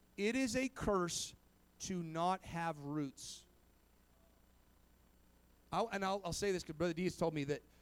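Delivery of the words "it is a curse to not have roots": very slow, every word drawn out, deliberate. Speaking to everybody about having roots, very slow. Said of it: "I'll do it as slow as possible".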